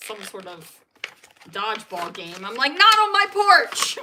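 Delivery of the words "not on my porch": very loud, high, drawn-out yell. Retelling yelling at kids playing on the porch: retelling own past yell. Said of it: "I've already yelled at the door".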